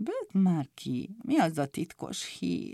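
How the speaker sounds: listless, flat muttering. Picúr, asked if he wants to hear the secret news, answers: listless mutter. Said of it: "Mormolta Picúr bágyattan".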